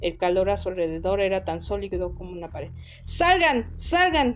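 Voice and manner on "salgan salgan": shrill, very high, booming roar. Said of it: "Bramó [name]".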